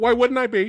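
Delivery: indignant, offended tone. Retelling a movie scene where a character asks if he's okay: imitating someone offended. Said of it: "all offended".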